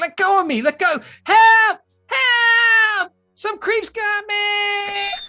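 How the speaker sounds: put-on very high, loud screaming child's voice. Narrating a game, the speaker voices a kid grabbed by the scruff: kid screaming for help. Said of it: "And he's just screaming".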